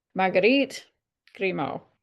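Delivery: attempted French accent. Reading out an author's name, attempting a French accent. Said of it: "my French accent is not good".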